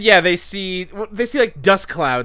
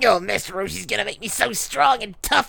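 rough, creaky muttering in a cartoon voice; 3 semitones higher, 3 dB quieter than usual. Riffing with friends on a parody cartoon scene, muttering Krillin voice. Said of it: "That's how Krillin talks".

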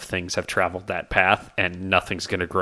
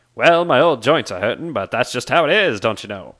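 old, elderly-sounding badger voice; 4 semitones higher, 4 dB louder than usual. Voicing an old badger-folk innkeeper greeting travellers: old badger innkeeper voice. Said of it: "Badger Folk man behind the counter".

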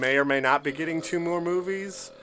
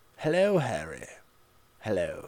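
very low, swooping character voice; 7 semitones lower, 6 dB quieter than usual. Retelling a Harry Potter scene, a speaker does a Gilderoy Lockhart voice. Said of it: "That was my impression of what I think Gilderoy Lockhart would sound like in the book".

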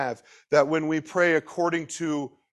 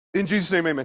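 rushed, very fast, words run together. Showing how people say a line at the end of a meal: rushed very fast. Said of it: "we say it really fast".

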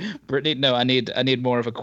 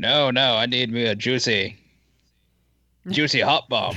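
slow, drawn-out, stately royal voice. Picturing a royal asking for a juicy hot bomb: Prince Philip impression. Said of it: "Prince Philip going".

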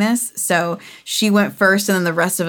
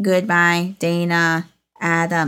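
small, little otherworldly alien creature voice. Retelling the end of the ride where e.t. says riders' names, little e.t. voice. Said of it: "like in his little E.T. voice".

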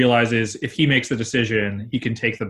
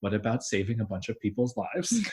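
soft, pointed put-on girl character voice; 9 dB quieter than usual. Retelling a character's reply to a complaint about a mission; Cassie voice. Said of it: "I like your Cassie voice".

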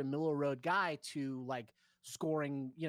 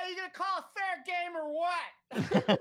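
put-on very high, loud, shrill drunken screaming yell; 5 dB louder than usual. Retelling a baseball game, the speaker imitates a drunk fan at the umpire: imitating a drunk fan yelling. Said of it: "he was screaming at the ump".

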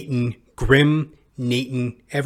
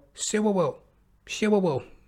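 put-on lisping child voice, much higher; 7 semitones higher, 3 dB quieter than usual. Retelling answering his grandma's breakfast question as a little kid, imitating a child's lisp. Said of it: "I guess I had a little bit of a lisp".

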